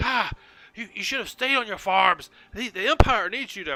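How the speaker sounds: scolding harshly. Voicing one of the figures on the road, berating kneeling captives: berating captives. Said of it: "One of them is berating".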